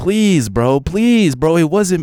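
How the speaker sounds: very high, desperate, pleading begging voice. Retelling how a man begged another man: imitating someone begging. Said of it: "you were begging another man".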